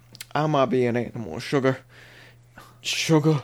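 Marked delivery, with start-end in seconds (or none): 0.4-1.8 lazy put-on southern American drawl. Recalling how he suddenly switched voices, imitating a southern drawl. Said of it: "southern drawl".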